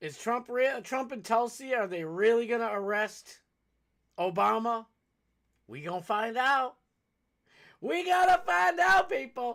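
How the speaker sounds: loud yell, pitch rising. Addressing people directly: yelling. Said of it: "I got to stop yelling".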